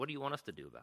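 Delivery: soft, dry, sarcastic tone. Retelling how one of the ladies responded, retelling a sarcastic remark. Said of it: "sort of sarcastically said".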